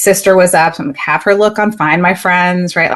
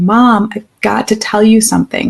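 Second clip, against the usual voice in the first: acted crying, sobbing through every word, tearful; 3 semitones higher than usual. Retelling her son's phone call: imitating her son sobbing. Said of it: "And crying, like, sobbing".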